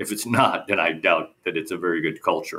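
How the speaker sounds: normal talking voice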